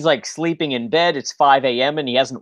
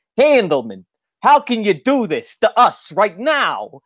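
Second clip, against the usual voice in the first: very bad fake New York accent, pitched up; 6 semitones higher than usual.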